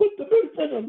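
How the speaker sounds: shrill, high-pitched hollering yell. Retelling a story, imitating a man yelling, yelled in high-pitched voice. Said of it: "he's yelling out in a high-pitched voice".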